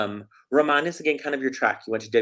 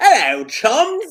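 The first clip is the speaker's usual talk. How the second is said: very loud, shrill, high, terrible put-on Cockney accent; 14 semitones higher, 9 dB louder than usual. Imagining the listener greeting people over there, worst cockney accent ever. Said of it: "the worst Cockney accent ever".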